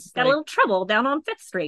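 Brooklyn gangster accent. Trying out the right accent for a bit, in an Al Capone gangster voice. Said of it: "That's Al Capone".

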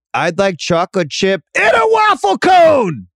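high, swooping announcer voice with swinging delivery. Speaker imitates the play-by-play guy ordering ice cream: Spiro Dedis impression. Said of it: "here's my impression of Spiro Dedis, the play-by-play guy tonight".

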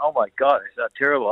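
ordinary talk

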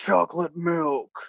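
slow, deep, spooky ghost voice. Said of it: "it sounds like that kind of voice".

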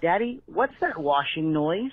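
put-on tiny, wee little child voice. Retelling what a child asked by the bed: imitating a child's tiny voice. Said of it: "I heard a tiny voice by the bed say".

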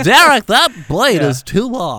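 very loud, slow, drawn-out scolding tone. Imitating the other speaker in the parking lot: impression of the co-host scolding. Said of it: "This is you in the parking lot".

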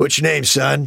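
crusty, gruff master chief voice. Retelling what Ed Harris said to a young production assistant: crusty Ed Harris voice. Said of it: "He's crusty and sounds like a Master Chief".

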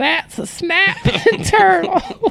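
put-on very high, slow old-woman voice. Quoting a TikTok audio: imitating an old woman's voice. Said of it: "the voice of the old woman who's all".

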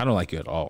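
put-on blunt, ruthless tone, low and flat. Quoting a girl's reply each time the speaker says they like her, mimicking a ruthless delivery. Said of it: "she says it in the most ruthless".

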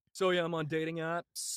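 mock dull, boring stand-up comic voice. Mocking comics going up on stage: imitating a dull stand-up comic. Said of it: "schmucks going up on stage doing".

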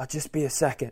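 put-on loud, repeated stage whisper. Retelling how a roommate kept repeating himself while sneaking in: imitating Steve's loud whisper. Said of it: "he thinks he's whispering, but he's loudly saying over and over".

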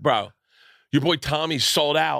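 bad Philadelphia accent. Retelling what a fan in Philadelphia said: bad Philadelphia accent impression. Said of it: "I'm doing accents bad".

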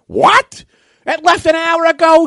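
mock loud scolding tone. Retelling how a gate agent reacted to a late traveler: imitating someone scolding loudly. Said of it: "She starts yelling at this guy".

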